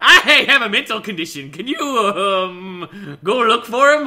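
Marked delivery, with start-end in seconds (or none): 1.8-3.2 weird, slow, drawn-out um. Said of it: "I say "um" like that 'cause it makes it sound really weird".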